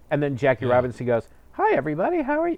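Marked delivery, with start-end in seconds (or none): 1.5-2.5 voice pushed very high in pitch. Imitating an actor in an old movie: imitating a higher-pitched voice. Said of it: "His voice was a little more high-pitched".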